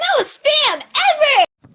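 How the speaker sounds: very high, swooping, silly cartoon-character voice. Playing with voices, enjoying sounding like a cartoon character: silly cartoon character voice. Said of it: "I like sounding like a cartoon character".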